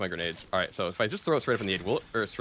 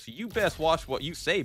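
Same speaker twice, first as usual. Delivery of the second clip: over-the-top, exaggerated American Southern drawl, pitched up; 7 semitones higher than usual. Playing a hunter taunting a Yankee: exaggerated American southern accent. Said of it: "with a southern accent at this point, like real southern".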